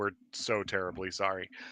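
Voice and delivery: low, quiet, soft, dead flat deadpan delivery. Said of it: "deadpan just said".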